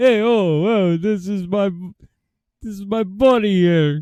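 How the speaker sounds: put-on New York Italian speech. Mocking how the guests talk: imitating a New York goomba accent. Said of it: "they all talk like this tonight".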